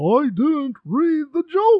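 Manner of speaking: high-pitched, loud, pushed-out exclamation. Reading out a quote you wrote down of what he said, use a Jerry Seinfeld voice. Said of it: "I'm going to read it in Jerry Seinfeld's voice".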